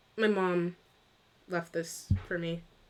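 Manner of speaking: crestfallen. Voicing a character asked about his necklace: crestfallen. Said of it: "his face sort of falls".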